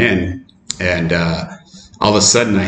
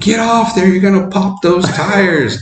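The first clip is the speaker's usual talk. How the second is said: put-on shrill, very high shrieking; 12 semitones higher than usual. Telling of riding a bike off the road, retelling people screaming. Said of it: "everybody's screaming at me".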